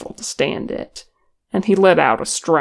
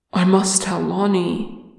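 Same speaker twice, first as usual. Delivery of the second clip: ordinary delivery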